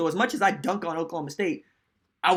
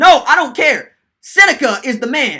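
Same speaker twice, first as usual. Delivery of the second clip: put-on excited, worked-up voice, higher and louder; 8 semitones higher, 14 dB louder than usual. Retelling a father defending a favorite player: imitating an excited dad. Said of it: "Pops, calm down, calm down".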